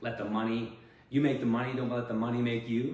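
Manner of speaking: ordinary talk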